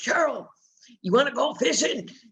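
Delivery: rough put-on voice. Recalling a man who would come over and ask her to go fishing: imitating a gruff voice. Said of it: "he had this real gruff voice".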